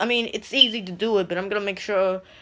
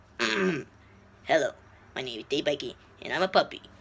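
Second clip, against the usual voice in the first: put-on cute puppy voice, lower and quieter; 5 semitones lower, 7 dB quieter than usual. Showing viewers what the puppy character sounds like: Dave Spikey voice. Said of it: "This is what he sounds like".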